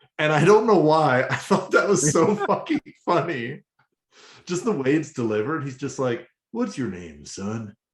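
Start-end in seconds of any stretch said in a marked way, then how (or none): 6.5-7.7 smooth, very low cowboy voice. Recounting a scene the speaker found hilarious, in Primal's smooth cowboy voice. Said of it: "in the weirdest, like smoothest cowboy voice".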